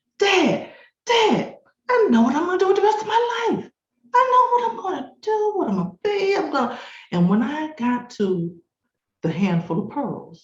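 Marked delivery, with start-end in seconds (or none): 0.2-6.8 very high, rushed, gushing excited shouting. Recounting running from the den to tell Dad, retelling excited shouting. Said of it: "all excited".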